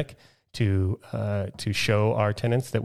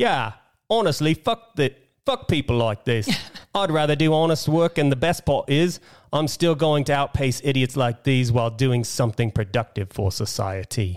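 put-on posh British accent, pitched up; 5 semitones higher, 3 dB louder than usual. Reading out a viewer comment as agreed, in a put-on British accent. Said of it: "you have to do it in some sort of, uh, U K accent".

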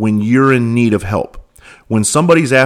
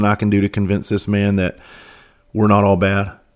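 usual speaking voice

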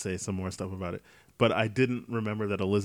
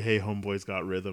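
usual speaking voice

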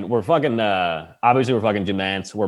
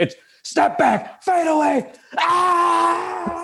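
yelling announcer voice, much higher pitch. Recalling a buzzer-beater, the speaker imitates Gus Johnson's yelling call. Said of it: "They're so big he just yells".

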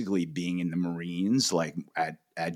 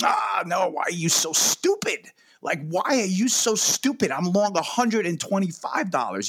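put-on very high, loud, shrill, thick Japanese accent; 13 semitones higher, 5 dB louder than usual. Retelling his answer about the position, in a hardcore Japanese accent. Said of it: "like with a Japanese hardcore accent".

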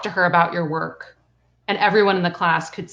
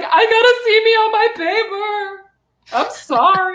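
mock very high, very slow, drawn-out tearful wail; 5 dB louder than usual. Retelling facing the teacher as a child: imitating own past near-tears. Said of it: "I'm trying so hard not to cry".

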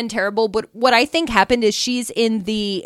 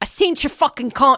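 fake British accent, breaking off; 3 semitones higher than usual. Imitating a contestant who puts on a fake British accent. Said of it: "who has a fake British accent, is like".

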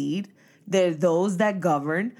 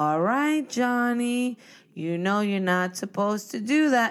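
weak, whiny, pleading tone; 3 semitones higher than usual. Showing the wrong way to tell someone to stop, whiny pleading tone. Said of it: "We're not going to whine and say".

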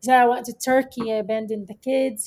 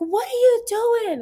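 mock, very high, loud, shrill outburst; 12 semitones higher than usual. Speaker retelling confronting a man who painfully twisted their hand, in a loud voice. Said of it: "With, like, a loud voice".

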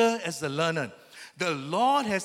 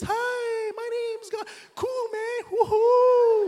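very high, very slow, stretched-out voice; 4 dB louder than usual. Speaker wonders aloud what God sounds like, trying a high-pitched God voice. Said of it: "does he have a high-pitched voice and he speaks".

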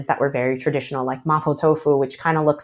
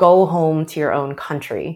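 plain

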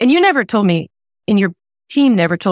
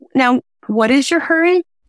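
very sweet, mock-sweet tone; 6 semitones higher than usual. Recalling the listener's reply after signing up for a weight loss program, retelling a sweet question. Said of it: "you very sweetly said to me".

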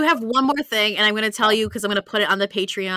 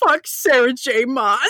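put-on sobbing outburst, crying through the words; 3 semitones higher than usual. Telling listeners about videos of yourself, imitating own sobbing. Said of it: "I am just sobbing, and at one point I go".

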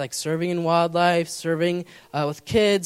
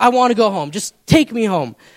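mock tearful, loud, angry, upset crying; 4 semitones higher, 8 dB louder than usual. Retelling her outburst on the way home: imitating Amelia crying angrily. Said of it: "She's crying. She's like".

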